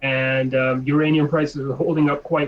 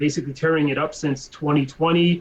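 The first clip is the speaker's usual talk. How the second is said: ordinary talk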